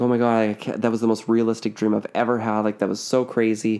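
ordinary talk, nothing marked

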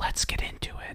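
quiet, breathy, barely voiced whisper. Imagining the opening of an adult video, said in a whisper. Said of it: "in, like, a whisper".

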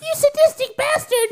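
very high little gnome voice. Voicing a gnome who looks at a player: voicing a gnome. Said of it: "One of the other gnomes looks at you and he goes".

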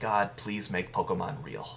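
ordinary talk, nothing marked

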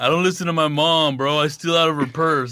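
laid-back stoner dude voice. Showing how a comedian named Willie plays a pothead: imitating Willie's pothead act. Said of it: "What does he do? Just a total".

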